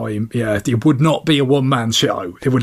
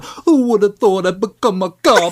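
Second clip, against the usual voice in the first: bad, put-on, high New York Italian accent; 7 semitones higher than usual. Mimicking the actor's New York role in Out for Justice, in a put-on Italian-American New York accent. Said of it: "a proper Italian American lad".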